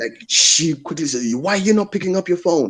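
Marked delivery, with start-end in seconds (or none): 1.3-2.7 high, put-on angry voice. Retelling calling a partner back after missed messages, imitating her angry voice. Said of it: "You know that angry voice".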